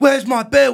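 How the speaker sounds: put-on high, loud London accent. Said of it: "You sound like you're from London".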